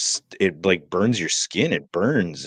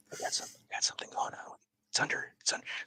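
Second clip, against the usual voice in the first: put-on whisper, quieter. Retelling telling a clinic desk lady about the problem: imitating own whisper.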